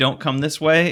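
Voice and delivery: put-on scream. Retelling a warning to a friend following into a pit: imitating own scream. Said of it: "and I screamed".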